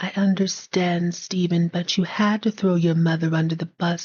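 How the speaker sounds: put-on near-whisper voice. Voicing Claudia answering Stephen: almost whispered Claudia voice. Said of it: "You gotta whisper it almost".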